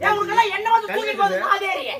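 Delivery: angry outburst, high-pitched.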